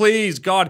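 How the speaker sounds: abject, pleading, groveling begging tone. Retelling a character pleading with Frank: imitating someone groveling. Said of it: "just grovel to him".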